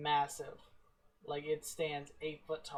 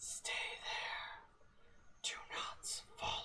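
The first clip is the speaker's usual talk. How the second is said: hushed, eerie, spooky, creepy whisper. A skeleton stops and turns around to speak to you, in an eerie, creepy voice. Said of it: "He says in this eerie, creepy voice".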